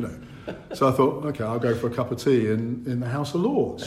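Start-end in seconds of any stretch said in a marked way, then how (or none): none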